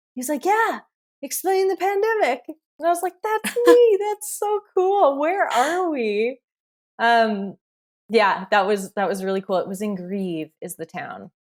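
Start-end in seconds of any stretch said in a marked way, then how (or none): 0.5-2.4 put-on heavy Italian accent, pitched very high. Retelling what a man who recognized the speaker in a store said, thickest Italian accent. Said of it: "the thickest Italian accent".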